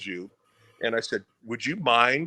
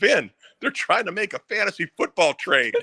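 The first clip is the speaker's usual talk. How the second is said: mock laughter breaking up the line, pitched-up blurt; 7 semitones higher, 3 dB louder than usual. Retelling telling the announcer what the bench players really discussed: imitating himself cracking up. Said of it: "cracking up".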